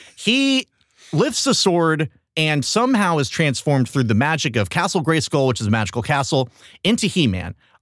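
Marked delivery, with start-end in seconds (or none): none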